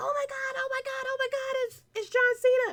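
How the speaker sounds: very high, frantic, top-of-the-lungs freaking-out yelling. Retelling a commentator's reaction to a surprise entrance: imitating Michael Cole yelling at the top of his lungs. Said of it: "Michael Cole freaking out on the top of his lungs".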